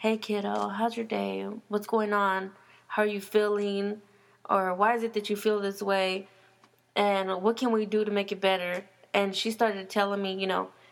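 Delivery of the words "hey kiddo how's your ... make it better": put-on low, calm voice. Retelling how she would come in and talk: imitating a low, calm voice. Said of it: "her voice real low and calm".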